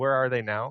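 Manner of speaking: ordinary delivery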